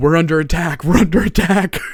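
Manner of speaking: fake, loud, high-pitched, panicked alarm screaming. Retelling how the one good at lying starts screaming to the guards, imitating someone screaming. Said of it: "will just start screaming".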